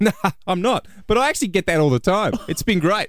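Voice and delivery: put-on smug, self-pleased tone. Retelling how a celebrity look-alike answered a stranger, imitating someone saying proudly. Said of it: "And he says proudly".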